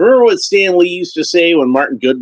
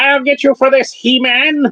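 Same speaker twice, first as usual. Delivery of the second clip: very high, squeezed-up cartoon villain voice; 12 semitones higher than usual. Retelling a cartoon where the villain is turned into a butterfly: Skeletor voice. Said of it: "whenever I do Skeletor's voice".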